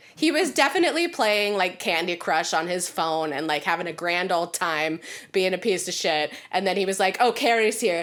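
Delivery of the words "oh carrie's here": put-on dramatic sulking voice. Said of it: "So fucking dramatic".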